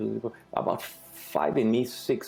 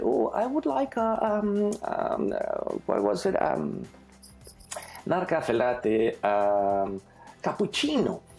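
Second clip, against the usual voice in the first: put-on slight Montreal French accent, sing-song, drawn-out ums; 7 semitones higher than usual. Retelling what a woman from Montreal ordered at the store: slight French accent. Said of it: "with a little French accent".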